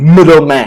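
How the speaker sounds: middleman with mid hit harder, first-syllable stress. Explaining word stress in a vocabulary word, stress on first syllable of middleman. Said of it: "the is stronger in the first syllable".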